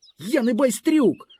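very high, shrill shout, yelled out. Narrator voices a boy who suddenly lifts his head while being mocked, shouting. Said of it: "раптом підняв голову і крикнув".

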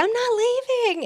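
put-on child's yell, pitched very high. Recalling filming, speaker acts out a skating kid at the people who locked the doors, retelling a kid's yell. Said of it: "he was yelling at them".

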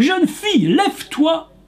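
crying-out delivery.

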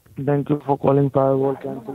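muffled speech, like phone in mouth. Agent greets a caller on the phone, muffled like the phone is in the mouth. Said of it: "You sound like you have the phone in your mouth".

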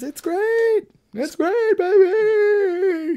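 put-on very high, loud, very slow, stretched baby voice. Listing songs from a movie soundtrack, doing a Seinfeld impression. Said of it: "That was my Seinfeld impression".

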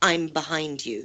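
deep, low male voice. Retelling what a voice said on a recorder: deep male voice. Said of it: "this deep male voice go".

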